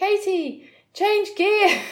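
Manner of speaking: shrill, very high, loud yelling. Recalling being passed on a hill, speaker retells a woman's shout over her shoulder. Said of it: "shouted over her shoulder".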